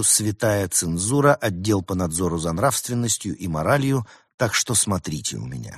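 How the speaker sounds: ordinary delivery, nothing marked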